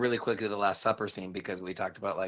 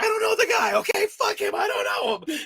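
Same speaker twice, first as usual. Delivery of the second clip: very high, swooping, over-the-top outburst; 6 dB louder than usual. Retelling a film scene where Peter denies knowing Jesus: imitating Peter, played really big. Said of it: "playing it really big".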